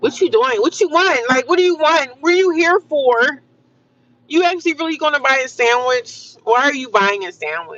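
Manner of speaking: annoyed, put-out tone. Speaker complaining about fast-food places, acting out the staff: imitating angry fast-food workers. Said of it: "everybody look pissed off, mad, angry".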